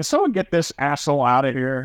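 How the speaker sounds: usual speaking voice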